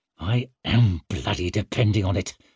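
words forced through gritted, clenched teeth. Leo replies to Barazin, through gritted teeth. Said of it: "forced through his gritted teeth".

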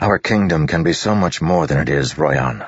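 ordinary talk

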